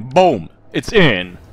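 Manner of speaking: very loud, put-on Italian-guy accent. Speaker landing a shot in a game, calling it in an Italian-guy accent. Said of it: "Sound like an Italian guy".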